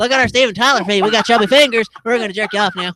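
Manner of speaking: squeaky voice pitched way up like helium.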